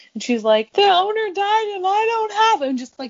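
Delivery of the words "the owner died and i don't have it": acted, very high voice, words through sobs. Retelling mom at a checkpoint when asked for the papers: imitating mom's sobbing. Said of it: "She just like starts sobbing".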